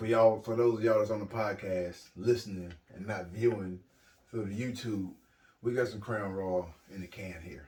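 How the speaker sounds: put-on, smoothed-out, easy delivery. Talking to podcast listeners after a drink: put-on smooth voice. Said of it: "You hear how my voice got smooth".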